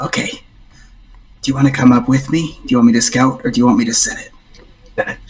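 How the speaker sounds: hushed murmur spoken under the breath. Surfacing from the water as a rat, speaking to a companion, under his breath. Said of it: "under his breath he goes".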